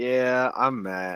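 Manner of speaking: soft, mopey, dejected, downcast sad voice. Introducing himself on the podcast, co-host matt says his name: sounding sad. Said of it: "why do you sound so sad?".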